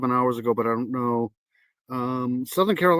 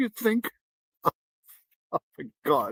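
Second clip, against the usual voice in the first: high, talking through laughter; 9 semitones higher, 3 dB quieter than usual. Reacting to a neighbor's description in an interview, laughing while talking. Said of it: "I gotta stop laughing".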